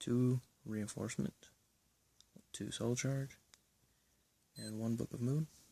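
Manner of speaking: speaking quietly. Listing cards in a deck while people sleep nearby: speaking quietly. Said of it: "I'm doing it a little differently and quietly because people are sleeping".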